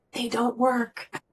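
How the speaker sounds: confiding hushed stage whisper. Retelling a pediatrician's hallway answer, imitating a half-whisper. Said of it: "whispered to me so the receptionist wouldn't hear".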